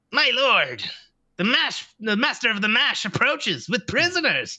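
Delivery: high, announcing gnome announcer voice. Voicing red-capped gnome-like creatures announcing an arrival: voicing red-capped gnome-like creatures. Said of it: "as they go".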